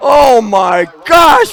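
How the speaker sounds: very loud, high, excited hollering. Speaker at a microphone as the UW La Crosse Eagles win the game; excited hollering. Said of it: "I'm sorry if I'm hollering in this microphone".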